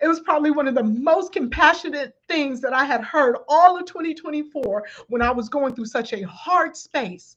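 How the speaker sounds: tearful voice, on the edge of tears. Recalling a woman's compassionate words during a hard time, about to cry. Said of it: "I'm about to cry".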